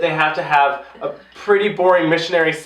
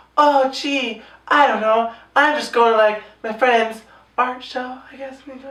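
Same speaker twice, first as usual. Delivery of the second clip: put-on meek, mousy, tentative manner, pitched up; 7 semitones higher than usual. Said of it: "frustrated with her at work".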